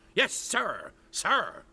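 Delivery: mock big dumb stiff voice. Mocking the head of security for standing there repeating: mocking a big dumb stiff. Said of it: "like a big dumb stiff, repeating".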